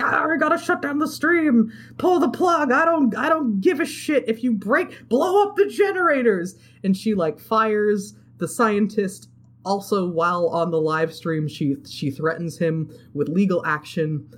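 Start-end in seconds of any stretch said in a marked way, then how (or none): 0.0-6.6 mock, very high, shrieking scream. Retelling how the CEO lady reacts to the interns: imitating someone screaming. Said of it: "she starts screaming at all the interns".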